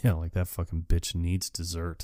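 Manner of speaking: cool, calm, quiet, level-headed cutting tone. Speaker retells a woman who, for once, speaks without yelling; retelling her calm remark. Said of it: "Doesn't yell or anything".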